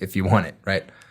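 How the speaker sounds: ordinary delivery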